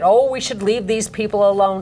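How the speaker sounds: normal talking voice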